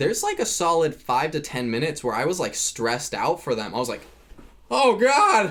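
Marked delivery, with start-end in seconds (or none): 4.7-5.5 very high, loud yelling. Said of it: "I was literally yelling at my T V".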